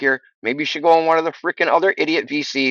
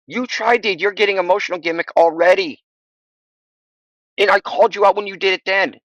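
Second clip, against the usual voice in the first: heated, argumentative, pitched up; 5 semitones higher than usual. Arguing back at another speaker in a voice chat debate: heated yelling. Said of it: "All you can do is get heated and yell at me".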